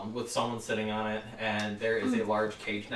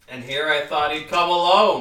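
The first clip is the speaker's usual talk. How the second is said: very loud, high, echoing, room-filling boom; 5 semitones higher, 12 dB louder than usual. Game master voicing a voice that echoes through the room, loud and booming. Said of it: "it's like very loud, echoing through the entire room".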